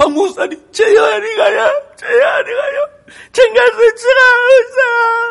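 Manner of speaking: high, loud, sobbing, pleading voice.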